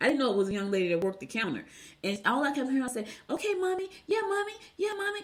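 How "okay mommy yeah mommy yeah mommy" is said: very high-pitched, annoying, endlessly repeated words. Retelling a store clerk who kept calling a customer mommy: imitating a high-pitched annoying voice. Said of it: "She had one of them high-pitched voice".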